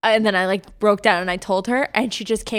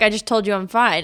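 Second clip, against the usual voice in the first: plain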